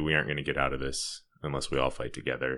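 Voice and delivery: ordinary talk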